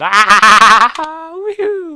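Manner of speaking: shrill, very high, loud cackling whooping war cry. Voicing a goblin charging with molten tongs: cackling goblin war cry. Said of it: "He's cackling as he comes at you".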